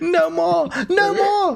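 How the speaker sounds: very high, shrill, drawn-out scream. Voicing a bugbear falling to the floor: high-pitched scream. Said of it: "high-pitched scream as he falls to the floor".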